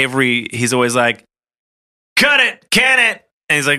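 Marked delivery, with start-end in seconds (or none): 2.2-3.3 badly done put-on voice, pitched very high. Imitating a Marvel actor in behind the scenes footage, Anthony Mackie impression. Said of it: "That's my Anthony Mackie impression".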